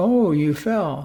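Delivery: very kind, sympathetic, caring voice. Retelling what she said when he fell, imitating a very kind voice. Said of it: "in a in a very kind voice".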